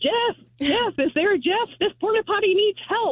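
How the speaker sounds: high, mild mock yell, like a crowd call. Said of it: "people outside of the porta potty yelling".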